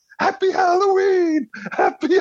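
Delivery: shrill, high-pitched yelling. Recalling yelling on Halloween, imitating George Costanza yelling. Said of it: "I was yelling".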